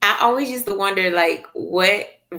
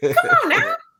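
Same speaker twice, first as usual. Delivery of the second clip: worked-up, excited voice, pitched higher. Arguing that the father would have got out: sounding like Chris Tucker. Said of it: "I know I sounded real like Chris Tucker right then".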